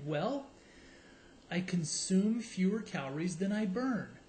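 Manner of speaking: mock deadpan, flat and expressionless delivery. Retelling a guest's answer to a talk show host; retelling a deadpan answer.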